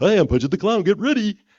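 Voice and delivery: squealed very high and loud. Speaker recalls the original voice they had, doing the terrible Punchy the Clown voice. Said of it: "it's a terrible voice".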